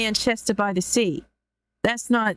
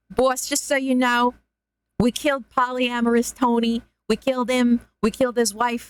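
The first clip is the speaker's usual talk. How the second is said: put-on thug voice with New York accent; 3 semitones higher than usual. Improvising a henchman reporting to the boss, New Yorker goon accent. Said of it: "put a New Yorker accent and talk like a goon henchman".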